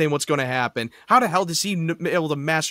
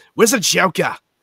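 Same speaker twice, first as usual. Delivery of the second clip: put-on Boston accent, movie-star style; 2 semitones higher, 5 dB louder than usual. Recalling how people made fun of the Batman casting, in a Ben Affleck Boston accent. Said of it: "make fun of his he to do the Boston accent".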